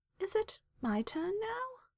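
timid, meek, very high-pitched, soft voice. Narrator reads Merrill asking during the card game, meek. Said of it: "Merrill asked meekly".

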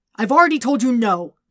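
loud, high, roaring bellow. Eddie refuses Venom's request again; roaring. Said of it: "he roared".

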